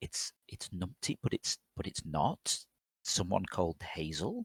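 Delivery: near-silent whisper. Playing a character who turns to Crow to explain: mouthing quietly. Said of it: "sort of mouth quietly".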